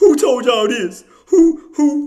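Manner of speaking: slow, loud, high-pitched boastful bragging voice. Teasing a fellow speaker about bragging: imitating Active bragging. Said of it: "'Cause you be like".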